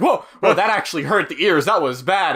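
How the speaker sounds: plain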